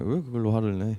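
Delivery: careless, detached, offhand, indifferent tone. Imitating a friend not even looking up from a phone game: imitating someone saying it offhandedly. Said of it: "막 쳐다도 안 보고 그냥 무심하게".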